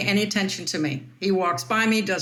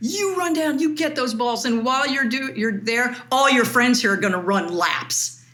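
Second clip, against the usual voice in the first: ranting, half-shouted mild yell; 4 semitones higher than usual. Umpire retelling being screamed at in front of other umpires, imitating someone screaming. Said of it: "he starts screaming".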